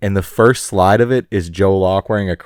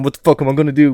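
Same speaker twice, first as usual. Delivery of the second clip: put-on crazed voice, higher pitch; 5 semitones higher than usual. Imitating an actor's usual crazed character: Jon Bernthal impression, crazed. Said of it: "he plays the same crazed fucking".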